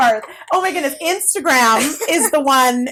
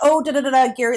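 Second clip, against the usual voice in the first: ordinary delivery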